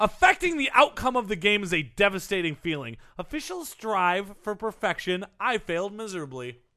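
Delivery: normal talking voice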